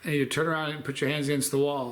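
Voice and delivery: ordinary talk, nothing marked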